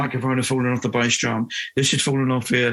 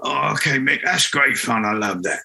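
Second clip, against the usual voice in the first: rough, really gruff man's voice. Retelling what Gary said to Mick, imitating Gary's gruff voice. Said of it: "Gary had this really gruff voice as well".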